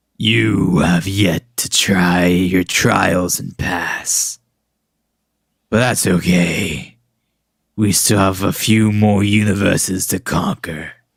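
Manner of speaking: low, deep, ominous, menacing voice. Storyteller voicing the hand of death as it speaks, in a deep voice. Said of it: "And in a deep voice".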